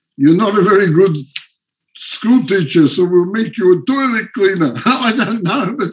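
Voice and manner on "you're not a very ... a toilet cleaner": heavily laid-on fake Russian accent. Retelling what they might have said about someone's career, in a fake Russian accent. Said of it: "my Russian accent's fake".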